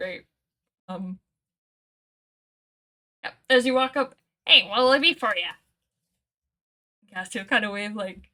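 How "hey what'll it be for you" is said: loud, raised goblin creature voice. Voicing a little goblin greeting visitors who walk up, in a goblin voice. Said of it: "That's just their voice now".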